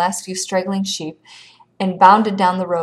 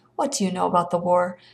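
ordinary delivery, nothing marked

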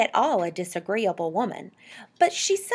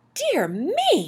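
high, scandalized, shocked cry of dismay; 7 semitones higher than usual. Narrator reads a woman reacting to talk about penguins: shocked tone. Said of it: "said mrs Popper in a shocked tone".

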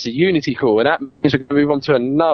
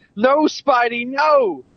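mock shrill, very high-pitched crowd yelling; 12 semitones higher than usual. Retelling cinema crowd reaction when Spider-Man got hit: imitating people shouting. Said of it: "people were shouting, like".

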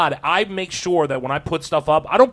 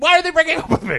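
high, fast, whiny mock voice. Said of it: "And then he's like".

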